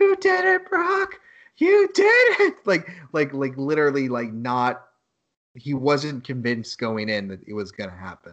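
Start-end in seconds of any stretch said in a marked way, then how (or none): 0.0-2.6 shrill, unhinged, very high, drawn-out scream. Retelling a wrestling manager's reaction to the win: imitating Paul Heyman screaming. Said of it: "he's literally just screaming".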